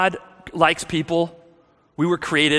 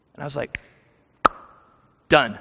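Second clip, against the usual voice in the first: ordinary delivery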